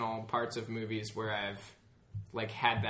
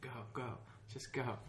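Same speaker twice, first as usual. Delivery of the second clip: put-on nervous, somewhat scared, urging plea; 11 dB quieter than usual. Retelling a movie scene with a drowning character: imitating a scared plea. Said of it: "kinda scared".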